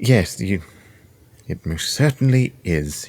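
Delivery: clenched-jaw delivery through gritted teeth. A character answering another character's remark, through gritted teeth. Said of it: "he says through gritted teeth".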